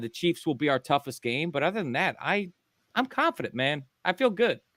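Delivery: positive, cheerful, upbeat delivery with pitch climbing. Answering about the hardest part of the schedule: positive, happy voice. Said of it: "your voice is sound so positive".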